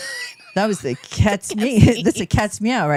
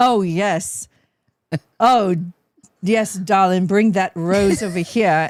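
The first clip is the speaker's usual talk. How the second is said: put-on slow, old-movie transatlantic mid-Atlantic accent; 2 semitones lower than usual. Discussing the accent of old movies, the speaker tries an old-timey mid-atlantic accent. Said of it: "I got it for like a second".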